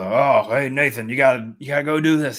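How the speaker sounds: loud voice, failed attempt at gruff. Comparing the game and film versions of Sully, a failed gruff Sully impression. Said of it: "Apparently I can't do gruff".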